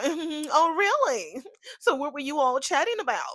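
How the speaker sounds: proper, prim way of talking. Retelling how June questioned them: imitating June talking real proper. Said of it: "She got real, uh, real proper".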